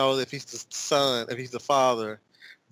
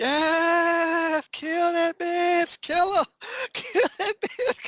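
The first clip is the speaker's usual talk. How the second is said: very high, shrill, excited screaming, drawn-out "yes". Recounting watching a scene with Ali and Ivy, retold screaming like Jan Van Zandt.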